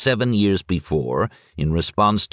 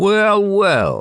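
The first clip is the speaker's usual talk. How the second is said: mocking, derisive tone; 4 semitones higher than usual. Blocking a man's way out of the kitchen and asking him, mocking voice. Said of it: "he asked in a mocking voice".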